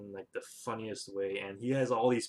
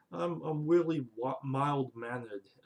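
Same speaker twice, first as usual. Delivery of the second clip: slow, drawn-out, bad cartoon hunter voice; 4 semitones higher than usual. Describing Elmer Fudd's shtick, doing a terrible Elmer Fudd impression. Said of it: "that was a terrible impression of Elmer Fudd".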